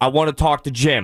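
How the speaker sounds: put-on insistent, forceful, demanding eight-year-old kid voice. Retelling a child caller's demand: imitating a forceful kid. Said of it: "You're very forceful for an eight-year-old".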